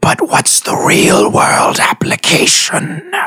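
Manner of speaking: slow feminine whisper, close in the ear. Voicing a creature whispering in a character's ear: feminine whisper. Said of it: "feminine whisper in your ear that just whispers".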